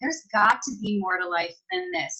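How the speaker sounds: ordinary talk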